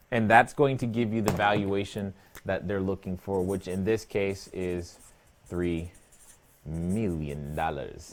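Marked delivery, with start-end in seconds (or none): 5.4-8.1 low, soft, hushed villain-style voice. Explaining a deal's valuation, the speaker states the figure in a Dr. Evil voice. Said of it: "in my best Doctor Evil voice".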